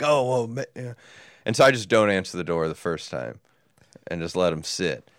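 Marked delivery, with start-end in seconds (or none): 0.0-1.0 acted panicky, alarmed, startled outburst. Retelling how the base camp guy reacted to the knock, imitating someone freaking out. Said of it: "the base camp guy freaking out".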